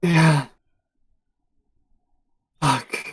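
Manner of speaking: quiet, soft-spoken tone. A game master voicing a man in a cell, speaking in a quiet tone. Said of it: "in a quiet tone".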